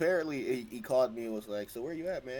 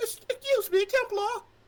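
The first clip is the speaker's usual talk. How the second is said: fake woman's voice, very high; 7 dB louder than usual. Speaker announces a voice attempt, then talks in a fake lady voice. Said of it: "I'm gonna try to give so like a like a fake ass lady voice right now".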